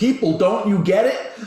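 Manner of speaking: very high, loud, shrill scream. Retelling Jamie screaming at the television during a campaign: imitating Jamie screaming. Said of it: "her screaming at the television saying".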